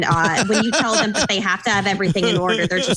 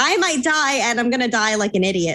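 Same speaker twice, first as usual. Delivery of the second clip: ordinary delivery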